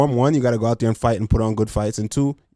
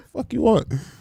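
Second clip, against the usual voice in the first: acted-out, very high, rude tone full of attitude; 12 semitones higher than usual. Retelling looking back at someone behind them: imitating an attitude. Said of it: "I'm looking back with an attitude".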